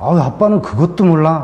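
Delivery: put-on annoyed teenage voice.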